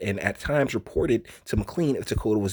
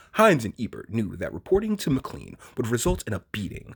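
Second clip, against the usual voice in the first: put-on grave, solemn, weighty, serious reading voice. Finishing the reading of a written account in a put-on serious voice. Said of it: "we're gonna finish this with a serious voice".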